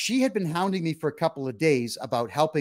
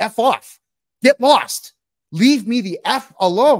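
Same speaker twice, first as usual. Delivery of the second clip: very loud, very slow, high-pitched shouting; 6 semitones higher, 10 dB louder than usual. Retelling a fight at a game night: retelling yelling at someone. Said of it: "I started yelling at her".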